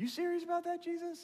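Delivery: very high, astonished squeak.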